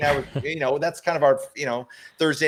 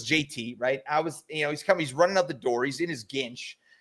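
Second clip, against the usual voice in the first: ordinary delivery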